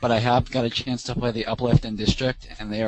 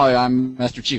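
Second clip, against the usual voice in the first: robotic text-to-speech style voice; 5 dB louder than usual. Retelling a video where an action figure talks: Microsoft Sam text-to-speech voice. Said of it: "it's like that Microsoft Sam text-to-speech voice".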